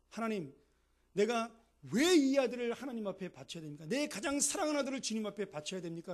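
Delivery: loud, high desperate cry.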